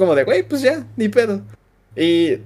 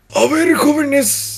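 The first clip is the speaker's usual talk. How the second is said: scratchy, hoarse teacher voice, pitched up; 9 semitones higher than usual. Retelling when the math teacher walked in on a Valentine's moment, imitating math teacher's raspy voice. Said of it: "pero con esas pinches borrasposas".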